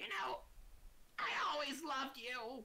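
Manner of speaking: high, slow dying goblin voice. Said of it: "looks up to the other goblin and says".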